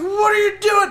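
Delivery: very high, terrified, panicked shouting. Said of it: "I was like".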